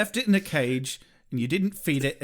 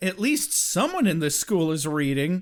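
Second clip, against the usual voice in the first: usual speaking voice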